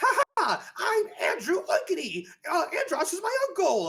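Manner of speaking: super high, squeaky, loud voice swooping all over. Speaker recalling a Star Fox Assault character, in Andrew Oikonny's super high voice. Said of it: "He had a super high pitched voice".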